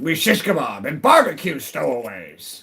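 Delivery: loud, rough pirate voice. Speaker showing the pirate voice they always default to, Tim Curry pirate voice. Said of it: "default to a pirate voice".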